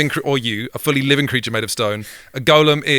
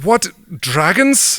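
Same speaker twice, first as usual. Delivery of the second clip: put-on Nordic-accented voice; 4 semitones higher than usual. In a role-play scene with other players, trying a Nordic accent. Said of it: "I'm trying to do Nordic".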